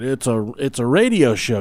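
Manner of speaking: ordinary delivery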